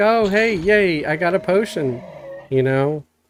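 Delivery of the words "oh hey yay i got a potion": high, forced, put-on cheery upbeat voice. Describing how they act in their videos, with put-on upbeat cheer. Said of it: "I try to be upbeat".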